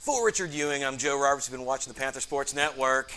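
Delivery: very loud sportscaster voice. Asked to close out the broadcast, the coach jokingly signs off, imitating his broadcast partner. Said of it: "impersonation of my broadcast partner".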